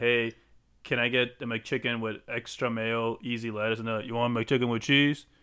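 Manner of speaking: normal talking voice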